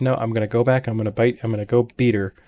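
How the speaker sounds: ordinary delivery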